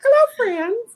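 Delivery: very high put-on cartoon character voice, pitch way up. Retelling how Captain Minnie greets guests: imitating Captain Minnie. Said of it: "She's like".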